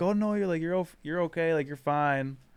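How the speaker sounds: put-on giggly voice. Retelling what the two ladies said: imitating ladies giggling while talking. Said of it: "kinda giggling".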